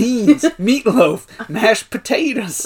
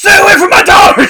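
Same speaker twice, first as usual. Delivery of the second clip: put-on scream, higher and louder; 11 semitones higher, 11 dB louder than usual. Retelling a father who suddenly screams at a guest: imitating a scream.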